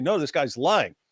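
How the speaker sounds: ordinary talk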